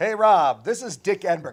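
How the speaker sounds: big, booming signature voice at very loud volume. Retelling a voicemail from a broadcaster: Dick Enberg voice. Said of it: "in that Dick Enberg voice".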